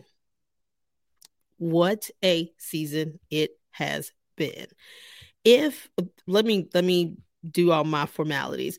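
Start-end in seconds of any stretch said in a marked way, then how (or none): 1.6-4.7 slow, weighty, softer savoring delivery.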